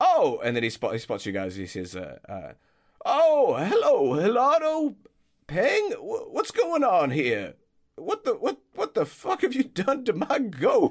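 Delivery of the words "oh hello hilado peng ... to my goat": put-on old man voice, much higher and slower. Narrator voicing Basil as he spots the group, old groundskeeper voice. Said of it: "the old groundskeeper".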